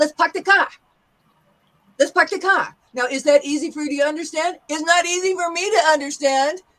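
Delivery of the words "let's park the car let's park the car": quick, rattled-off New York accent. Teaching how New Yorkers drop the R, demonstrating a fast New York accent. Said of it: "they also speak faster".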